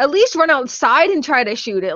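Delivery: ordinary delivery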